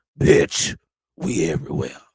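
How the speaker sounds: dropped way down, very low, deep voice. Podcast host closing out an episode: deep voice. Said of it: "Ooh, that voice got deep".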